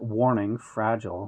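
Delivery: plain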